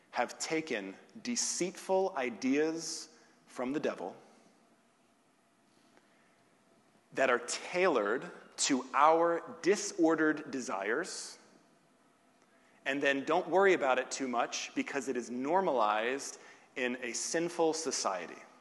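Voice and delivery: slow, deliberate, each word carefully laid out. A speaker quotes a sentence from a book to listeners, said slowly. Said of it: "I'm going to say this slowly".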